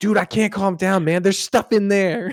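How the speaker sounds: acted freaking out, voice very high. Retelling a character's reaction to a cardboard box, imitating someone flipping out. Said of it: "he kinda flips out".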